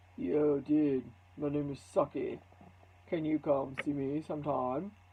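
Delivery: deep puppet voice, dropped way down low. Speaker demonstrating how to play with voices using a puppet, in a deep Saki voice. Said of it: "maybe Saki has a deep voice".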